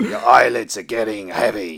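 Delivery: loud, put-on soothing, hypnotic voice. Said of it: "where he's sort of going".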